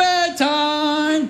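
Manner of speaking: high, playful calling-out voice.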